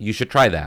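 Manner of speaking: normal talking voice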